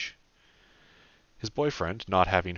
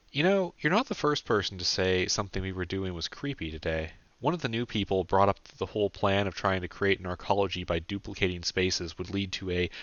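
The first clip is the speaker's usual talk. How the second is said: plain reading voice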